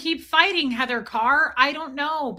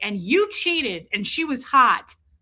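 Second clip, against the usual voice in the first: normal talking voice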